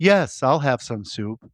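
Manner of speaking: sci-fi onboard ship's computer voice. Retelling a movie scene, the mannequin's voice answering: HAL-like voice. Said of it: "It's like Hal from I Can't, I Can't Open the Bay Doors".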